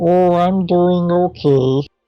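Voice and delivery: squeaky helium voice. Answering how they are doing, in a put-on helium voice. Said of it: "What voice is that?".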